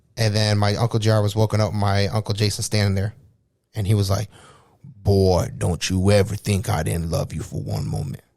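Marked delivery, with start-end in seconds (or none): 4.8-8.2 put-on deep, slow, drawn-out grandfatherly old man voice. Retelling Uncle Jason's words to Uncle J R that night, imitating how Uncle Jason talked. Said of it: "Which is how my grandpa talks".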